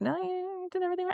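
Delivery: high, soft, otherworldly spirit voice.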